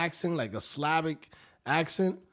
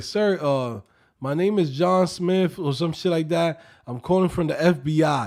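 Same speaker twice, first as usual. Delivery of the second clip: imitated, mock Slavic accent; 5 dB louder than usual. Retelling a call from a man claiming to be from the FBI, imitating a Slavic accent. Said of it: "Fucking Slavic accent".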